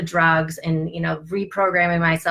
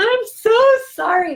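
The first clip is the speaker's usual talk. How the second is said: mock top-of-the-lungs scream, very high and loud; 5 dB louder than usual. Recalling screaming an apology to herself while working on herself: reenacting her own past screaming. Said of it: "screaming at the top of my lungs".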